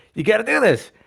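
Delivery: high, loud, passionate delivery. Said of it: "the passion in your voice".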